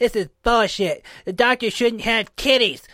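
very high-pitched, very loud cartoon voice. Acting out a few angry internet commenters, Cartman impression. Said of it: "I did not know you could do a decent Cartman".

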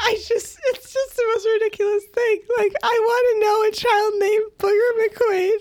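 very high, slow words squeezed out through laughter. Explaining why a comic character's name is ridiculous: crying with laughter. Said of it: "I think you're crying".

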